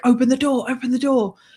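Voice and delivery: put-on urgent, high, frantic screaming. Retelling a man running at the car screaming to be let in, retelling a man screaming. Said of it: "he's screaming like".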